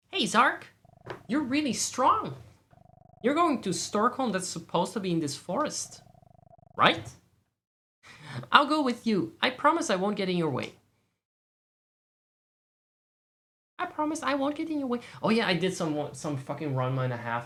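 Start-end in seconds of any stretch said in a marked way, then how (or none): 0.1-15.0 annoying put-on girl voice. Voicing the girl in the game who offers to come along: annoying Meilin voice. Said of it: "what annoying voice I gave her".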